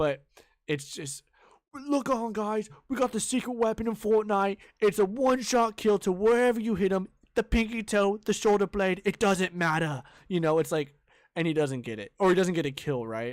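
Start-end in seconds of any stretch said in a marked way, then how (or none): 1.7-10.0 high, loud, hyped online video intro voice. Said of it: "that's exactly how it is".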